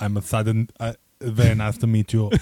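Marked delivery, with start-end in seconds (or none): 1.2-2.3 put-on Austrian accent, lower pitch. Performing a line another speaker asked for: Arnold Schwarzenegger voice. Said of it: "let me hear Arnold".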